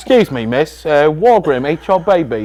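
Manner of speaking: London accent put on over the voice. During a comedy riff about a Wargrim, one speaker addresses a woman: London accent. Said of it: "you just added like a London accent".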